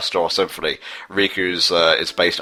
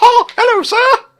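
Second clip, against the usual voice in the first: very high, very loud, shrill, booming cartoon-mouse voice; 10 dB louder than usual. Acting out the reply to the conductor's hello: Mickey Mouse voice. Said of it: "here is Mickey Mouse".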